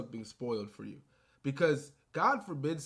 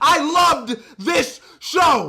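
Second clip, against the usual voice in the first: very loud, shrill, high-pitched scream; 13 semitones higher, 17 dB louder than usual. Reviewing the Daredevil show on video, screaming at the top of their lungs. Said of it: "screaming at the top of my lungs like how I am right now".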